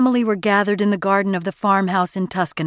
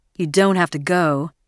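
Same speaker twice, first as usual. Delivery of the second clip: plain reading voice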